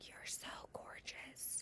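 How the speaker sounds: hushed, close, breathy whisper. Retelling what passing men say close to her head: imitating a whisper. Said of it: "they whisper that".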